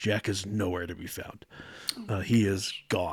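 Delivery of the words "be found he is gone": normal talking voice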